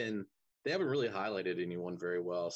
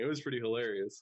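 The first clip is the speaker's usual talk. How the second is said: ordinary talk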